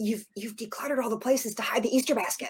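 quiet, hushed stage whisper. Retelling the husband's words while hiding the easter basket: imitating husband half-whispering. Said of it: "we're whispering 'cause the house is so darn small".

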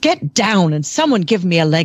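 put-on, very British accent. Retelling a riding teacher's words to a student: imitating Betty's very British accent. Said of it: "in her very British accent".

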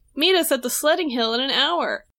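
plain

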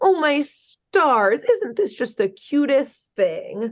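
put-on baby talk, high, slow and drawn out. Recapping Major Glory speaking to children as the association laughs, Major Glory's little baby voice. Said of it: "puts on this little baby voice".

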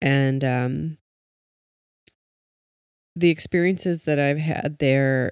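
cracking, breaking voice, drawn-out, with feeling. Starting to tell of hospice massage experiences, voice cracking. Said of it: "I don't know why my voice is cracking".

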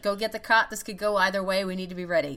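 usual speaking voice

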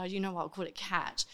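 normal talking voice

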